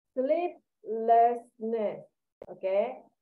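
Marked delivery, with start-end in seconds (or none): 0.2-2.0 "sleeplessness" very slow, each sound spelled out. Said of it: "pay attention to sleeplessness".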